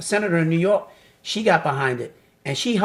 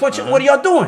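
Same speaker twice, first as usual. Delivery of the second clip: sharply raised, high-pitched voice; 8 semitones higher, 6 dB louder than usual. Retelling breaking up a hallway fight between two boys: retelling a raised voice. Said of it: "now I gotta raise my voice".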